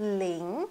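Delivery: rising second tone on ling. Chinese class in French, learning the number zero: rising second tone on 'ling'. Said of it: "Deuxième ton, le ton qui monte".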